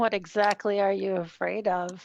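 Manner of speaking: voice dropped far down. Narrator voicing a woman who answers a challenge, in a much lower pitched voice. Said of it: "She says in a much lower pitched voice".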